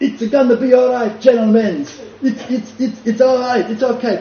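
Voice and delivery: put-on heavy Italian accent. Retelling a tense meeting, voicing one of the sweating men in a thick Italian accent. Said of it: "in their thick Italian accents".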